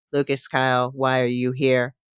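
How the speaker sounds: flat, robotic, machine-like monotone. A narrator voices a computer at a door questioning a visitor, in a flat robotic voice. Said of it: "flat and robotic".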